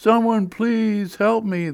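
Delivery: ghostly moan. Narrating the New Milford Ghost story, the ghost's plea in a moaning ghost voice. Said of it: "the ghost moaned".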